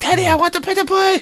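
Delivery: put-on furious little-kid voice, very high. A parent retells one of the boys yelling for a pedal bike, imitating an angry kid yelling. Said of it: "he's all pissed at me".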